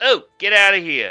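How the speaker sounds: dismissive tone. Voicing Ginger as she shoos a player away from the front door: Ginger shooing someone away. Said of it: "Ginger is shooing you away".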